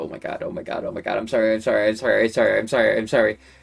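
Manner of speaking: flustered, embarrassed apologetic voice. Retelling bumping into someone as a freshman: retelling an embarrassed apology. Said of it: "I'm just embarrassed. My face is red".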